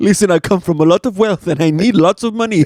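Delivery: put-on very poor Nigerian accent. Riffing on a vampire Nigerian-prince scam, speaker voices the prince: very poor Nigerian accent. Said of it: "very poor Nigerian accents".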